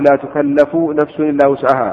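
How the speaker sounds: normal talking voice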